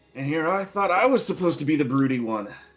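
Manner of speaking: playful, teasing joking tone. Walking up to two elves in character, greeting them: joking tone. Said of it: "as jokingly as I can".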